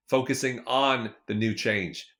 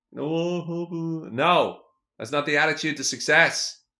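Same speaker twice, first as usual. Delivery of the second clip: raised voice, much slower; 5 semitones higher, 4 dB louder than usual. Speaking to the listener about taking action, in a raised voice. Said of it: "I don't know why I'm raising my voice at you".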